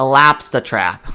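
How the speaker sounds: Bostonian accent. Redoing a line from the game in a home-area accent: boston accent. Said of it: "gotta say it like my home area".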